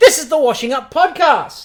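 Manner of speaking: loud, forceful, aggressive, in-your-face delivery. A podcast host opens the show with the title, aggressive intro delivery. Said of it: "this is a very, like, aggressive intro".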